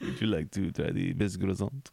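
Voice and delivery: clumsy, failed French accent. Playing a guide showing the listener around the city, in a bad French accent. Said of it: "I can't do a French accent".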